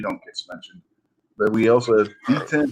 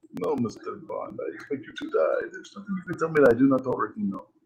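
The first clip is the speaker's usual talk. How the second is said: half-whispered, hushed, breathy villain voice; 3 semitones higher, 7 dB quieter than usual. Joking about a James Bond movie, doing a Goldfinger impression. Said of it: "There's my Goldfinger impression".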